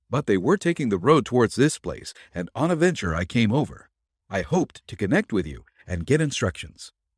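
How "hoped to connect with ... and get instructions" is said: ordinary delivery, nothing marked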